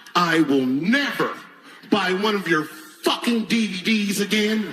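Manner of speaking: upset, cutting, slow, deliberate jabbing tone. Retelling a woman's last remark as she leaves: imitating an upset parting dig. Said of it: "take one last dig at me".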